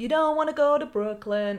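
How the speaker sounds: bad, terrible put-on New York accent. Retelling what a woman kept saying on the way to Brooklyn: terrible put-on accent. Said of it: "This is a terrible accent".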